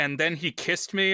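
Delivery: normal talking voice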